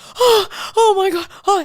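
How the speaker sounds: high-pitched, loud, panicked night-terror cry. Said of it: "And he literally is screaming".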